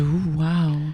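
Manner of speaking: acted frightened gasp. Retelling a moment from a show, imitating Meredith's spooked gasp. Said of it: "she's legit spooked".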